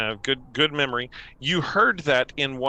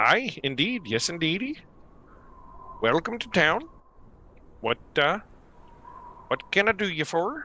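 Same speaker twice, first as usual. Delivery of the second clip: put-on Minnesota accent, pitched up; 5 semitones higher than usual. Voicing a Caer Konig local welcoming visitors to town, in a Minnesota accent. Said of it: "Caer Konig speaks in a Minnesota accent".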